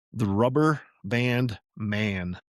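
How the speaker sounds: very slow, every word carefully enunciated. Reader pausing the chapter to say a phrase very slowly, best diction. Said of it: "if I say it very slowly".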